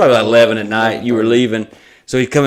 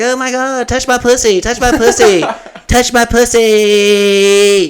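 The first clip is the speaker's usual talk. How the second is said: very high, very slow, drawn-out dog voice; 12 semitones higher than usual. Retelling voicing the dog while she runs to Mike: imitating the dog's voice. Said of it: "doing her voice".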